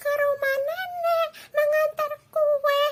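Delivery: put-on scared, very high, trembling, quavering girl voice. Narrator reading the fairy tale voices the girl answering the wolf, trembling voice. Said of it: "Dengan suaranya yang gemetar".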